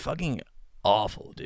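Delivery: bad, fake American accent. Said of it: "We're awful at American accents".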